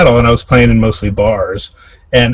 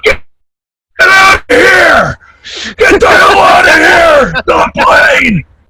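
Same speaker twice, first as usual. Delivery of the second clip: acted-out drawn-out scream, very high and swooping; 3 dB louder than usual. Retelling a gig, yelling at a saxophone player: imitating himself screaming. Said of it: "I just scream at him through his whole solo".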